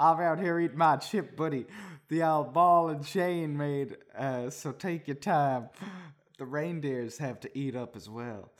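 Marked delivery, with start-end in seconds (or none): none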